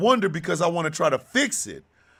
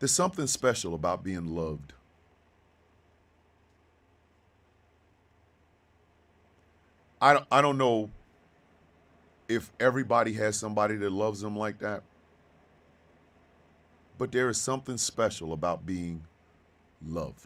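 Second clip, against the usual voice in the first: fighting tears, lower and quieter; 10 semitones lower, 7 dB quieter than usual. Speaking about being loved unconditionally, holding back tears. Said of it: "I'm gonna try to do this without crying".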